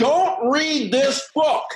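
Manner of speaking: very high, very slow, drawn-out delivery. Imitating Charlie Jones holding up a book on a panel: Charlie Jones impression. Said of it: "a Charlie Jones imitation".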